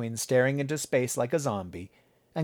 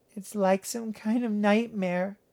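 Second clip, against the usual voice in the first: indistinct, half-swallowed, slightly high mumbling; 9 semitones higher than usual. A daughter responds to her father's dismay over her injury, mumbling. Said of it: "Natalie mumbled".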